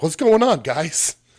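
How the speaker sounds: high, loud, breezy casual voice. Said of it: "your boss walk up and be like".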